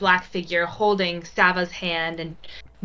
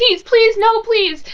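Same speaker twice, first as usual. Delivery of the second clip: very high, loud, desperate begging voice; 5 dB louder than usual. Narrating a scene in second person, voicing Mrs. Locke pulling at your arm: pleading desperately. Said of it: "she's going to pull against your arm".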